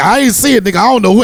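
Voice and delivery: very loud, high-pitched, protesting voice.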